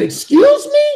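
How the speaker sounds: very high, drawn-out, indignant excuse me.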